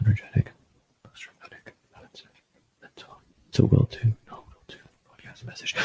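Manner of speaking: soft, unvoiced whisper.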